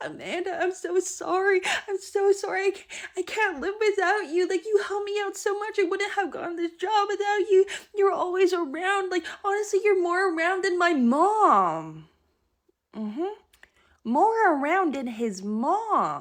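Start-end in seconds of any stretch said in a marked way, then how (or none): 0.0-12.1 put-on very high, blubbering, toddler-like bawling. Retelling what he said to Amanda after she ended it, imitating him bawling like a toddler. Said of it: "he starts bawling his eyes out like a toddler".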